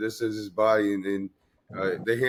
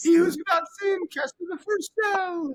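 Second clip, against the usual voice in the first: over-the-top Italian accent, very high-pitched; 3 dB louder than usual. Riffing on how Jesus would sound as an Italian, speak in an Italian Jesus voice. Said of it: "Italian Jesus is pretty funny".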